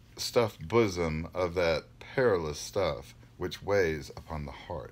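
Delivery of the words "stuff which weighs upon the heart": plain reading voice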